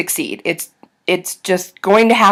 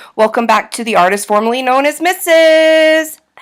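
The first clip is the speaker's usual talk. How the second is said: odd, high, put-on voice. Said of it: "I don't know why I'm talking like this".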